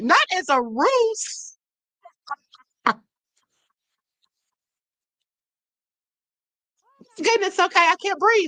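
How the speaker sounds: words broken up by laughing. Reacting to a lawsuit document while reading it aloud: laughing while talking. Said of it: "I'm sorry for laughing".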